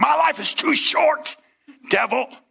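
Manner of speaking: slow, rough preacher voice, very high and rasping. Telling the audience what to say to the mirror when offended, in preacher voice. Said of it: "Get your preacher voice on".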